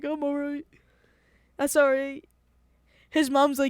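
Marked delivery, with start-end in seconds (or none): 0.0-2.2 loud, tearful, put-on sobbing through the words. Retelling a friend with red eyes, imitating Raul crying. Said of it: "he's, like, crying".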